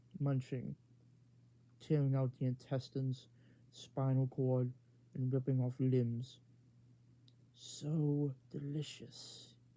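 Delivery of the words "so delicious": menacing, villainous, evil monster voice. Narrating a story, a giant Utahraptor speaks while feasting: evil creature voice. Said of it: "the creature said in a in an evil voice".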